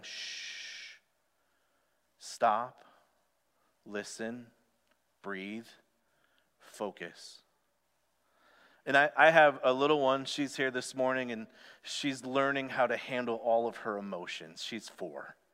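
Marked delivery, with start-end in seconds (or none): 0.0-7.4 gentle, soft whisper, barely there. Speaker voices the Spirit speaking when so much is happening, soft gentle voice. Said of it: "soft, gentle voice of the Spirit going".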